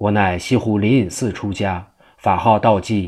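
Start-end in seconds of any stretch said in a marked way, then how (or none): none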